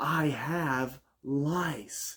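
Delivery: all-out loud, high-pitched hollering. Retelling how a friend made sure a man in a loud bar heard him, retelling a shout. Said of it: "And he lets out a".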